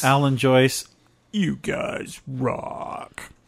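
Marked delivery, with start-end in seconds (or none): 1.3-3.2 fake very deep, slow voice, almost a burp. Thanking listeners by name, trying for a put-on very low voice. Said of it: "You said that funny".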